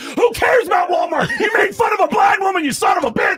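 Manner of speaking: put-on very high, angry, outraged screaming. Retelling a comedy show where the audience turned on a comic: imitating an audience screaming. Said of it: "people are screaming at him".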